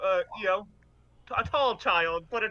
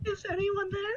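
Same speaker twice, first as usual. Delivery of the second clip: put-on very high, scared small child voice; 12 semitones higher, 3 dB quieter than usual. In a role-play, a player pretends to be a scared little kid; young child voice. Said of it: "very like young child voice".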